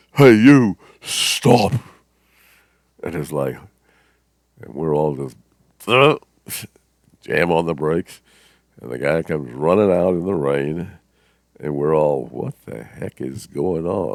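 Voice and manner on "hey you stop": huge, booming, very loud and high shout. Retelling a man shouting at them as the car starts off, huge booming voice. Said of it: "this huge booming voice says".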